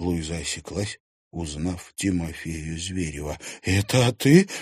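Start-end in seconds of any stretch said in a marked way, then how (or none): 3.6-4.5 unsteady, trembling, quivering, quavering voice. Narrator reads a woman recognizing a familiar man, in a trembling voice. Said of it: "дрожащим голосом произнесла она".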